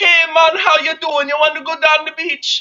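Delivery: very loud, high, put-on Jamaican accent. Comparing Jamaican and Scottish accents, speaker shows a Jamaican accent impression. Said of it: "think like".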